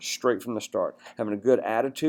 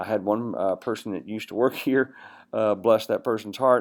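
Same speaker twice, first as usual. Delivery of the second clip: plain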